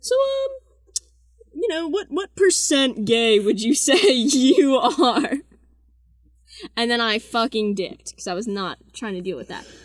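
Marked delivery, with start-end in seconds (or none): 0.0-5.3 put-on very high, slow, awkward, squeaky young teen voice. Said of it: "he goes".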